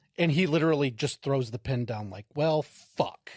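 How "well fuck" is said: put-on playful, joking tone. Retelling someone throwing the pen down: imitating joking around. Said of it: "Just joking around".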